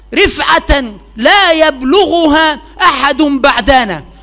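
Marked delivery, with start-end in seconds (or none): none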